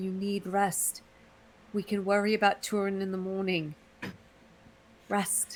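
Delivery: worried, soft, hushed half-whisper. In a tabletop game, a player's character speaks to a companion: concerned half-whisper. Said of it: "She's just gonna whisper like".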